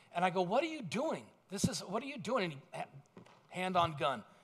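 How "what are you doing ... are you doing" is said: angry, mad, demanding tone. Retelling being pulled over by an officer: retelling own angry words. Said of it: "now I'm mad".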